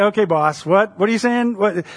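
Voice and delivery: put-on sarcasm in every word, mocking. Acting out a fisherman's reply to his master, acting out Simon's sarcastic reply. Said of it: "Simon's being sarcastic at this moment".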